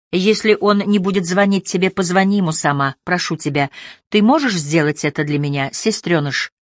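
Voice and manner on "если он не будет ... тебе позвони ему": plain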